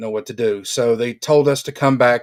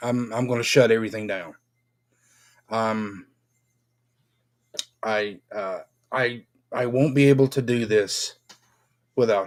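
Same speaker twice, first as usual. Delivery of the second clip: choked up, welling up, emotion breaking through. Telling others what would happen if it turned out to be cancer, getting emotional. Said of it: "I'm getting emotional from it".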